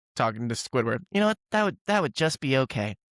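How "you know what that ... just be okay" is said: goofy cartoon voice with wildly swooping pitch. Talking about a show he enjoyed, doing his SpongeBob voice. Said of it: "I'm doing my SpongeBob voice here".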